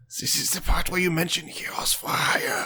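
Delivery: theatrical stage whisper, audible aside. Voicing the talking sword, in a stage whisper. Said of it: "stage whisperish".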